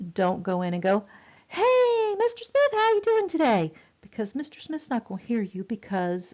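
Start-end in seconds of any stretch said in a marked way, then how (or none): 1.5-3.7 very high-pitched, squeaky voice. Showing how not to greet Mister Smith, who may not hear high frequencies, in a too-high voice. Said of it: "you need to kind of lower your voice".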